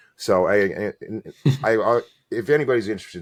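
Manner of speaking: stumbling repeat of I. Offering to tell the listeners more about their experiences, the speaker stutters. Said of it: "sorry for stuttering".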